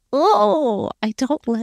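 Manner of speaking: shuddering voice with teeth chattering. Speaker tells a co-host about caterpillars falling from trees, teeth chattering. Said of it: "I literally just heard your teeth chatter".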